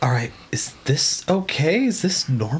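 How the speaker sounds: stage half-whisper. Voicing a character who leans down to ask Bada: half-whispering. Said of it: "kind of whispers to Bada".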